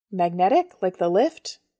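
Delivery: plain reading voice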